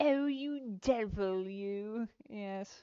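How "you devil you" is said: put-on British accent. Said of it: "Fifty Shocking British Insults".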